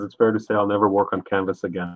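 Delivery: ordinary talk, nothing marked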